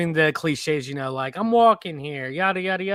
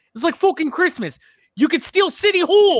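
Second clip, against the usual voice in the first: put-on very high-pitched, loud, strong Brooklyn kid accent; 12 semitones higher, 8 dB louder than usual. Talking about New York accents, quoting a scene from a movie; Die Hard with a Vengeance kid. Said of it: "very Brooklyn kid".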